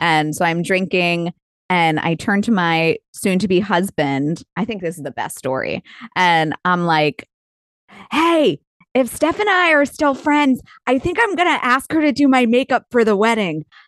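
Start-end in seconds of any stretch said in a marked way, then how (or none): 8.1-13.6 put-on drunk shouted whisper, much higher. Telling a story to Emily, she acts out what she told her fiancé while retelling a drunk would-be whisper. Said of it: "I thought I was whispering, but I was also drunk".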